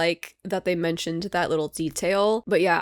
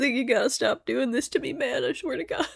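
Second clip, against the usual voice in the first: high, tearful talking through sobs; 7 semitones higher than usual. Recording the show's outro after the episode, crying while talking. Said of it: "I'm just gonna cry through the outro".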